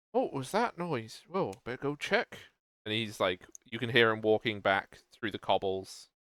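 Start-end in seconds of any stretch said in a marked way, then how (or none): 0.1-2.4 soft mutter under the breath. Voicing a guard in an alley who heard a noise: muttering to himself. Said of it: "you can hear the muttering of him".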